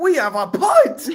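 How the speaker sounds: voice breaking into very high, drawn-out squeak. Retelling how Scott Hansen announced a punt: imitating a voice crack. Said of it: "heard the voice crack".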